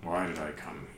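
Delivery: weird, hushed, guttural, evil undead voice. Describing a confused character drifting at the hostel gates; weird guttural evil necrotic voice. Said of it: "that sort of like weird, guttural, evil, necrotic voice".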